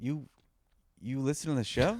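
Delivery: surprised, disbelieving, caught-off-guard voice with stammering. Retelling how a man reacted to a photo request: imitating someone surprised. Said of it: "he was very surprised by the whole thing".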